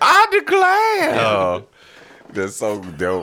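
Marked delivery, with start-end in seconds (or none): 0.0-1.1 put-on old-movie lady voice, higher and louder. Joking about courtroom dramas, acting a pretty woman: put-on pretty woman voice from old films. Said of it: "It's like a really pretty woman. She goes".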